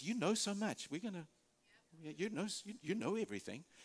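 put-on sarcastic voice. Retelling God's words to Job, mock-sarcastic God. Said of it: "very sarcastically".

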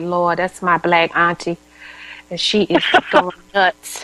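usual speaking voice

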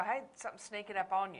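ordinary talk

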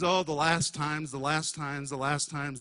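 ordinary delivery

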